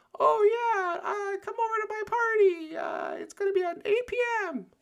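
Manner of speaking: very high-pitched, shrill, loud voice. Speaker mocking how someone retells conversations, imitating Matthew, super high voice. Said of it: "pitch shift his voice super high".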